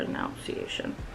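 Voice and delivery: low, soft, robotic dictionary-style voice.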